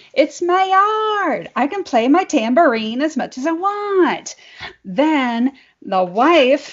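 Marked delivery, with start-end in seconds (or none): 0.2-4.4 high mock shout with yard stretched out. Retelling a yard quarrel over a dog and a tambourine: retelling own shout. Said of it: "And I started shouting".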